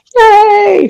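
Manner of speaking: cheerful, high, shouted cheering yay.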